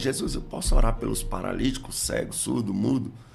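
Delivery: ordinary delivery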